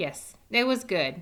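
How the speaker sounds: ordinary delivery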